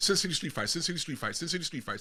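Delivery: quick, quiet, rapidly rattled-off speech.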